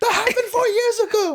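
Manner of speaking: very high, laughing, squealing mock exasperated scold.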